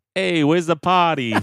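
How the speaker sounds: loud, high, clumsy put-on Boston accent. Put on the spot to show it off, the speaker tries a bad Boston accent. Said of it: "you made me do a Boston accent".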